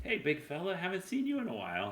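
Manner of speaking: tiny, squeaky, very high voice. A narrator voices Gila greeting the listener from behind, in Gila's tiny little voice. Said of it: "you hear a familiar tiny little voice from behind".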